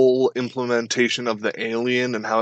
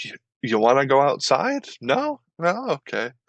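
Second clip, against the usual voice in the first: sarcastic sing-song taunt, swooping up and down; 4 semitones higher than usual. Retelling a game villain wheeling the player to the door: Traeger impression. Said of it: "he's like".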